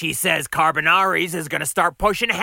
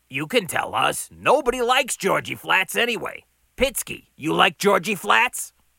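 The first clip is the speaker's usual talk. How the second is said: plain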